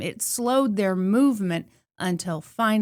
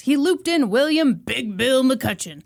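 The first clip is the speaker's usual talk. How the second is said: silly, jokey, goofy put-on voice; 3 semitones higher than usual. Telling the Donner Party rescue story, saying a name in a goofy voice. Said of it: "I said that in a goofy voice".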